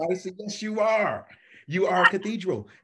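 loud, high, laughing insistence.

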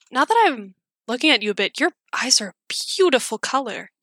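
charming, flirty, turning on the charm. Voicing a character casting a charm spell: charming, flirty voice. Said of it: "turn on the charm a little bit and be like".

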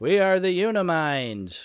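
very slow, high twangy drawl. Imitating the Little Green Men in the movie: Little Green Men with Patrick Warburton twang. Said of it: "a twang of Patrick Warburton to them".

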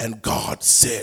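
breathy, over-the-top, exaggerated preacher intoning. Mocking preachers who talk like somebody else, in a mock preacher voice. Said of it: "preachers that just be like".

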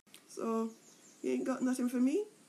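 sheepish, shamefaced and embarrassed tone. Narrator reads a man asking a fairy for something, sheepish. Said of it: "said the man sheepishly".

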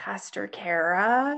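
put-on guilty, confessing child voice, a name drawn out. A pastor retells a boy coming up after the service, imitating a guilty kid's voice. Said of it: "I have something to confess kid's voice".

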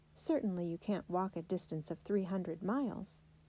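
ordinary delivery

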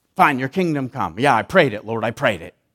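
bitter, reluctant, resentful tone. Showing how a prayer sounds when said unhappily: mock resentful prayer. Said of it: "pray it with resentment and disagreement".

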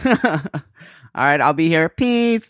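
robotic, machine-like robot voice. Replying to a goodbye until next week: robot voice. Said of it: "Your robot voice is so much better".

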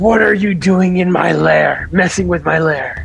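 menacing, intimidating monster voice, in your face. Voicing a creature pinning a player down: screaming as loud as he can. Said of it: "he's just going to scream as loud as he can".

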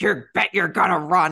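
loud, put-on scary voice. Recalling dad's Halloween party trick, the speaker imitates dad's scary voice. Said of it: "like in his scary voice".

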